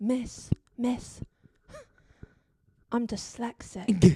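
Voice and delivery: put-on very drawn-out, slow, dramatic kid voice. Retelling a kid turning to the teacher: imitating a dramatic kid. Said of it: "it's really dramatic".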